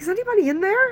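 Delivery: high, loud, mocking calling voice.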